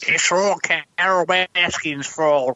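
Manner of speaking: very high, squeaky voice. After saying they can't really do the voice: squeaky Joe Exotic impression. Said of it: "squeaky voice on it".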